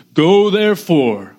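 mild, kingly, commanding tone. Speaker pictures a kingly figure ordering troops into battle, booming Jesus command. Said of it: "he just sort of booms from the heavens".

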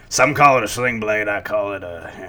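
put-on southern drawl. Quoting a line as Carl from Sling Blade. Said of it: "Carl from, uh, Sling Blade".

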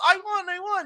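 high, excited, proud, evil gloating.

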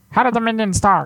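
tiny, high, squeaky cartoon voice. Trying out how the Minions talk while the group discusses them, in a Minions voice. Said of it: "Do they talk like this?".

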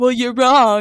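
put-on, loud, dismissive, brushing-off tone. Imitating people who dismiss an opinion: mocking impersonation of dismissive people. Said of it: "That was such a good impersonation".

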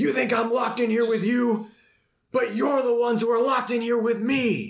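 slow, high-pitched yelling.

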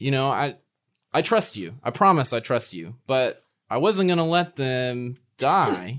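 ordinary delivery

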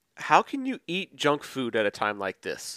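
ordinary talk, nothing marked

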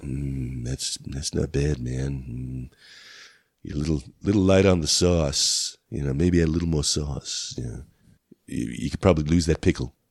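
stoned-sounding voice. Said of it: "is this how you talk when you're high".

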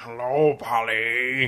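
creepy, weird toy robot voice. Speaker recalls the robot birthday gift in Rocky IV, weird robot voice. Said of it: "it has this weird voice like".

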